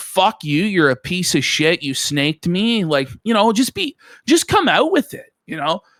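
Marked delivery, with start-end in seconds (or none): none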